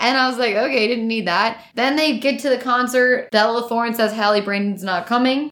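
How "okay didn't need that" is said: plain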